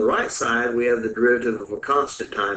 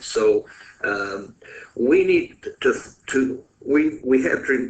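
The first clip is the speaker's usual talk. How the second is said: excited, eager stuttering; 3 semitones higher than usual. Explaining a step of a math solution: excited stuttering. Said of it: "I'm stuttering because I'm getting excited".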